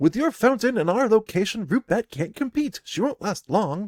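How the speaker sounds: voice pitched very high. Narrating a scene, voicing a green-haired man speaking to his partner: high voice. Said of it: "he says in a high voice".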